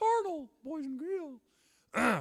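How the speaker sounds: squeaky voice, high and loud. Speaker reading First Corinthians aloud to boys and girls, in a Mickey Mouse voice. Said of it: "My Mickey Mouse voice".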